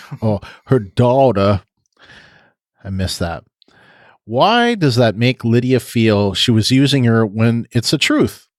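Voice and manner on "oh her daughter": put-on, drawn-out Southern drawl. Recapping a scene, quoting what Alpha said: Alpha Southern drawl voice. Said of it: "In my Alpha Southern drawl voice".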